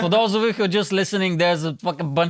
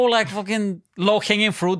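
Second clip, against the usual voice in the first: ordinary talk, nothing marked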